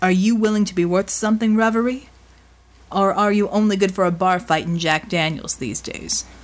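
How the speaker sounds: ordinary delivery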